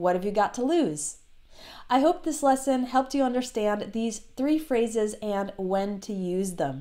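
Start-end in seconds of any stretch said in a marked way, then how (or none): 0.0-1.2 fast, reduced speech, lower pitch. Teacher demonstrates how the phrase sounds when speaking fast, fast, reduced speech. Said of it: "So when you're speaking fast".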